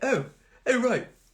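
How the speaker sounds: high, mocking voice of nasty, bitter people. Speaker mimics the way bitter, nasty people speak: mocking bitter people's voice. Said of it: "I don't know why they speak like this".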